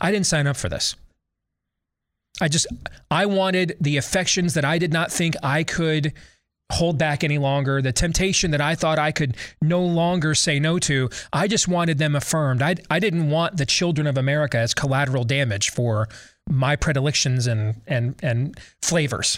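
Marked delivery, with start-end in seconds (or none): none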